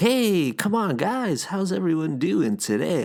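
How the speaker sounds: very high, excited, swooping radio host voice. Showing how a daytime podcast would sound, in an excited radio voice. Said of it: "that's like my excited like radio voice".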